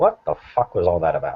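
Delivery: hushed whisper. Asking another character about what just happened, in a hushed whisper. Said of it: "in a hush whisper".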